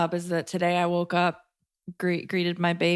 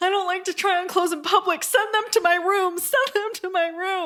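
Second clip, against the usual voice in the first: sobbing in a very high, tearful voice; 13 semitones higher than usual. Retelling a rich woman at a store refusing to try on clothes: imitating someone crying. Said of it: "crying, like".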